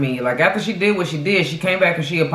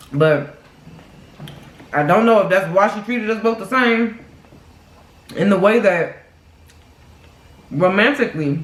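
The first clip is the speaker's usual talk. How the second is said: speaking through a full mouth of food; 3 semitones higher than usual. Talking to viewers about a woman she dealt with, while talking with food in mouth. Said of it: "excuse me for talking with food in my mouth".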